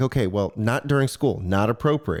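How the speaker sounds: normal talking voice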